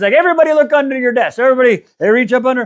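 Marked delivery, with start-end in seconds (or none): 0.1-1.4 high-pitched announcing delivery. Retelling a leader handing out books to everyone: Oprah giveaway voice. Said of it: "she has the Oprah moment".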